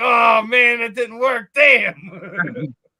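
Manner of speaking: exasperated burst of frustration.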